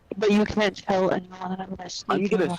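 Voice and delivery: playful, fake put-on stage half-whisper. Telling the others a secret about sneaking in: put-on half-whisper. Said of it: "I have to whisper".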